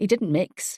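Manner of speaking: ordinary delivery, nothing marked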